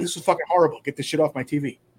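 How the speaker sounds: ordinary talk, nothing marked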